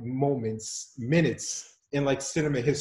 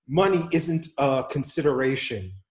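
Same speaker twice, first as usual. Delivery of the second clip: plain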